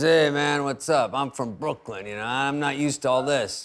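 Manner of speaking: imitated tough-guy voice. Retelling what a Vegas driver said: imitating a tough-guy driver. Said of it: "sort of a Guido type of, you know, tough guy".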